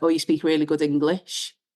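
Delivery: ordinary talk, nothing marked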